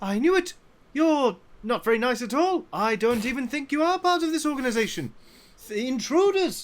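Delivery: angry shouting. Voicing the main cultist who wakes up and accuses intruders: main cultist shouting angrily. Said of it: "the main cultist goes".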